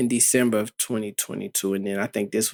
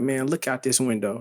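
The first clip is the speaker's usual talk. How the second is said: plain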